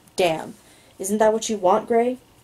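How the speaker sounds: plain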